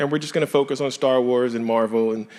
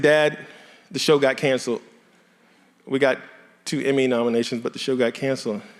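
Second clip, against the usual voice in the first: plain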